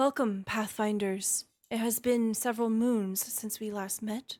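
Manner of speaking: mild, kindly, gentle and gracious. Voicing Rena as she greets the Pathfinders, in Rena's very soft voice. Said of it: "she speaks in a very soft voice".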